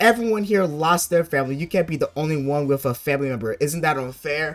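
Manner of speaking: ordinary talk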